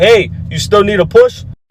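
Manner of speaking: mild, light, casual calling out. Opening the front door and seeing no one, the speaker retells calling out: retelling a yell. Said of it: "so I just yell".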